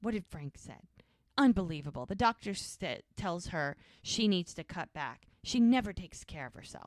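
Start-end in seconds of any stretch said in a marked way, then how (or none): 0.0-0.8 imitated getting mad. Retelling a character's reaction to hearing her mom was out drinking: imitating someone getting mad. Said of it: "she's getting mad".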